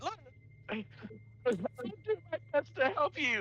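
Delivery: very high-pitched, frightened, terrified voice. Voicing a captured creature pleading with captors: terrified. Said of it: "he's starting to get terrified".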